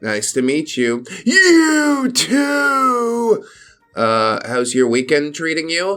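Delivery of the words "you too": put-on wheezy, high voice with drawn-out "meh". Voicing the character Sarah, answering Opie about her weekend, in a wheezy Sarah voice. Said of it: "I'd like to give her the wheezy voice".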